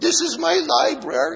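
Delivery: put-on croaky old man voice, very high and slow. Telling a joke, voicing an old man showing visitors his village, in a put-on croaky old-man voice. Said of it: "is why it sounds so croaky".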